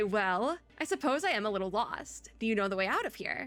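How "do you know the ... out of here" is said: ordinary talk, nothing marked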